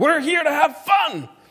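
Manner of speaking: high, loud frustrated yell. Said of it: "they're yelling at their children".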